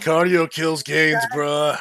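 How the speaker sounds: slow, lunkheaded put-on gym bro drawl. Voicing the imagined roommate as a gym bro: put-on gym bro voice. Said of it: "that's what I'm kind of imagining with this guy".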